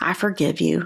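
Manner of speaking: quiet under-the-breath muttering. Retelling how a woman said it to her mother's photo: saying it quietly under her breath. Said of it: "she quietly, under her breath, just kinda, kinda just says it quickly".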